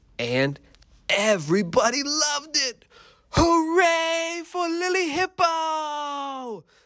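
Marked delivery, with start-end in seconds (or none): 3.3-6.6 very high, very slow, drawn-out cheer. The crowd cheers the hippo after her performance, crying out. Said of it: "They cried out".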